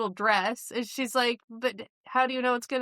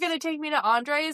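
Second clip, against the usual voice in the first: mock gushing, thrilled, eager, excited delivery; 4 semitones higher than usual. Retelling a wife's reaction to her husband's dinner invitation, mock-excited. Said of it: "He gets all excited like you would".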